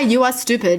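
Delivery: plain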